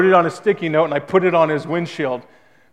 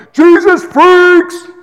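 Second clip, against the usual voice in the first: shrill, very high, full-volume yell; 9 dB louder than usual. Retelling what a guy driving by yelled at him one night: retelling a yell. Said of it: "That's what he yells to me".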